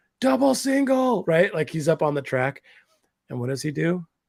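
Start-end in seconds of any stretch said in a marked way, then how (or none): 0.2-1.2 mock very high, shrill, loud call. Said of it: "and I'm yelling".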